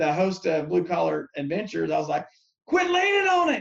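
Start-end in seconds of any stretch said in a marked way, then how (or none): 2.7-3.6 very high-pitched, yelled shout. Recalling a shoot, retelling yelling at the show host, retelling a yell. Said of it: "And then I yelled at Jay".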